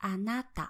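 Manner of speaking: pitch peak then drop within anata. Teaching pitch accent patterns, example of the downstep type: accent peak then drop on anata. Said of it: "the downstep type, the one which has an accent peak".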